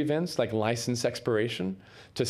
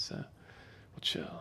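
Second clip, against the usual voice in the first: slow, relaxed whisper, slowing down. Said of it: "I am talking, like, pretty fast".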